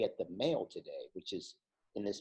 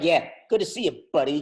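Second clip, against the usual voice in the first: mock-sarcastic put-on voice; 8 semitones higher, 14 dB louder than usual. Acting out how someone would say good to see you, imitating a sarcastic "buddy". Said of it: "a more sarcastic buddy. If you're, you're like".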